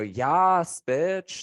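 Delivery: put-on high drunk-woman voice, "yas" stretched out. Telling the other speaker what drunk women always say at bars: imitating drunk women. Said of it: "drunk women do that a lot. That and they always go".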